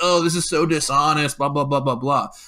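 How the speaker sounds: acted whining, complaining voice. Retelling a complaint posted online about an interview: whiny imitation of Paul Nealon. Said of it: "he's crying about it online".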